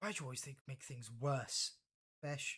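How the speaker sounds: very calm, composed, unruffled, even voice. A game master voices Fabia, speaking to Besh after pulling Nez from rubble: very calm voice. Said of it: "in a very calm voice".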